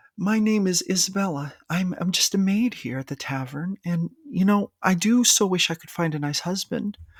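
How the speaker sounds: tavern maid voice. Showing how to portray a tavern maid just by changing pitch: higher, softer voice. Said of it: "this is how I portray this voice".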